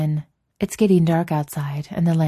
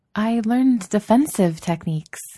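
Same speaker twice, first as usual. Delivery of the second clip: hesitant, uncertain, unsure, pitched-up voice; 6 semitones higher than usual. Asami, urged by Korra to attack her, answers uncertainly. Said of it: "Asami says uncertainly".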